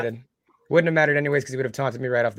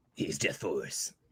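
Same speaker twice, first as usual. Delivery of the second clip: dramatic epic announcer voice, lower and quieter; 10 semitones lower, 12 dB quieter than usual. Naming a game character, joking about how to say it: epic announcer voice. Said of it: "You gotta say it in epic voice like that".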